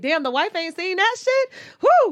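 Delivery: high, loud, amazed outburst.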